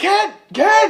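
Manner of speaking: loud, high-pitched yelling.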